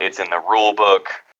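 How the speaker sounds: ordinary delivery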